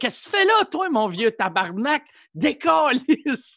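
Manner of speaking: put-on high-pitched hollering. Retelling finding an old man in his Tempo shelter, re-enacting a yell. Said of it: "Je criais après".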